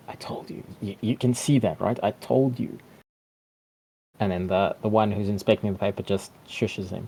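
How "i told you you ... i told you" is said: goblin voice in stage whisper. Narrator voices one goblin speaking to another, in a hushed tone. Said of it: "in a hushed tone say".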